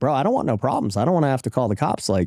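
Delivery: ordinary talk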